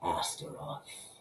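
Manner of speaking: hushed, breathy mutter under the breath. Reading a story aloud, the narrator alone in an office: muttered. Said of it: "I muttered to the empty office".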